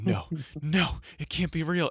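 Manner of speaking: put-on high, panting, gasping, hyperventilating disbelief. Retelling a scene where David figures it out: imitating hyperventilating. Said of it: "David is like hyperventilating".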